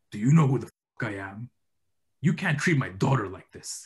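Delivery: menacing, threatening voice. Reading a story aloud in the voice of the man at the door. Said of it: "the voice of the guy who's knocking the door".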